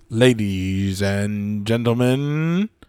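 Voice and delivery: smooth on-air radio host announcer delivery. Making a mock announcement to ladies and gentlemen, radio announcer voice. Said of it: "That was a pretty good radio voice".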